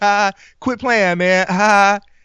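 uneasy, nervous chuckle around the words. Retelling how the other guy reacted while his hair was being cut, imitating a nervous laugh. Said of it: "he laughs kind of nervously".

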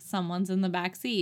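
ordinary talk, nothing marked

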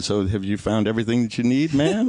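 put-on, stiff, squirming, very uncomfortable politeness. Retelling what a cashier asked a customer: imitating an uncomfortable cashier. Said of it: "he just kind of very uncomfortably said".

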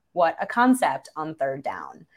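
ordinary talk, nothing marked

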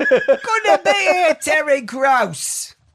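put-on high, drawn-out Cockney accent. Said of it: "he's not Cockney".

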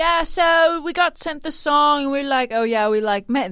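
put-on Swedish accent, high. Retelling what the Swedish songwriters said in a New York Times breakdown, Swedish accent. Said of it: "This is my Swedish accent".

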